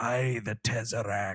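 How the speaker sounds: put-on pirate voice. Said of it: "you probably could confuse some people".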